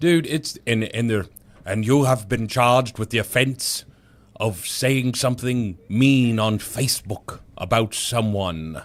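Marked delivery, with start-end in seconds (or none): 1.6-8.8 clumsy, bad put-on British accent. Imitating a UK judge reading out a charge: bad put-on UK judge accent. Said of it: "I don't know this accent, it's not very good".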